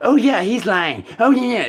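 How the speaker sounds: very high, squeaky put-on girl voice. Describing voices talking about him, imitating the girl voice. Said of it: "the girl voice, is all like".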